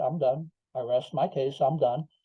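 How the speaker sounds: ordinary talk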